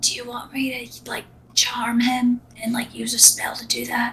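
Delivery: close, sidling, soft, hushed whisper. Voicing a character who slides up behind another and asks: whispering. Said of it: "kind of whispers to him".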